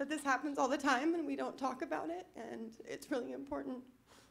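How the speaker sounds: high, tearful voice, on the verge of crying. Speaker explaining the whole point of their project, close to tears. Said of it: "I don't know why I'm going to cry".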